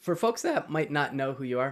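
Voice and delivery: cracking, breaking voice. Interviewer asking a guest to introduce themselves to listeners, voice cracking. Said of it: "my voice just cracked".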